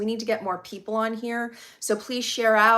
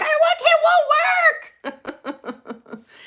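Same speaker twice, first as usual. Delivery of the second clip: very high, swooping, drawn-out frustrated scream; 7 dB louder than usual. Apologizing for being late, acting out her earlier outburst: retelling frustrated screaming. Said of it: "I was screaming at the situation".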